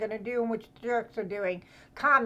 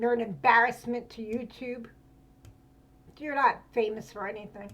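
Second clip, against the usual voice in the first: furious, choking back angry tears. Calling out a YouTuber for lying about others: furious, holding back tears. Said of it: "I'm trying to hold back tears".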